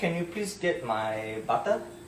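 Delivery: put-on Malaysian accent. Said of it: "give us some Malaysian accent".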